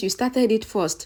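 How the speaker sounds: ordinary delivery, nothing marked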